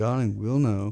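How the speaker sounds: soft, consoling, sympathetic tone. Speaker retells how she answered his question; imitating a sympathetic tone. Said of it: "she looks at me all sympathetic and goes".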